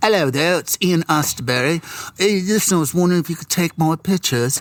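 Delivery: put-on poor English accent. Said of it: "This is a really bad English accent".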